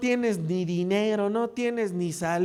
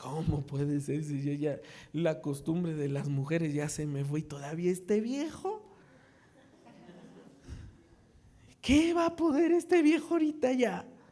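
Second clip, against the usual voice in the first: put-on mocking, scornful scoffing, lower and quieter; 4 semitones lower, 4 dB quieter than usual. A preacher retells how she answered the promise, mimicking a mocking tone. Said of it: "se rió en tono de burla".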